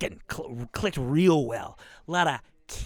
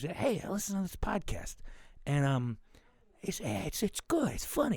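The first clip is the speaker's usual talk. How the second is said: soft, slow, awkward, bashful put-on voice; 2 semitones higher, 7 dB quieter than usual. Acting out a listener telling friends about the show: put-on voice of a shy fan recommending. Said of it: "you don't have to do that voice".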